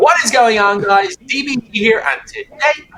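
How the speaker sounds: very high, drawn-out, stretched-out delivery. Showing the difference from the stream voice: YouTube voice. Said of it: "and then there's the YouTube voice".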